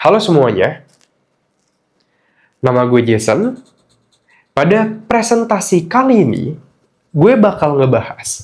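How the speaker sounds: short phrases, clear pause after each one. Demonstrating clear presentation speaking: pauses between short phrases. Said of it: "Gue ngomong kayak gini, ... jadi ada jedanya".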